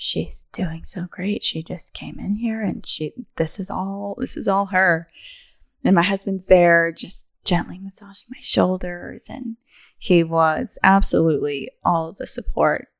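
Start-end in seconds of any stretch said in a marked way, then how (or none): 0.0-4.2 hushed, soft half-whisper. Retelling what midwives said during labor: imitating midwives half-whispering. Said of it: "I hear them whispering".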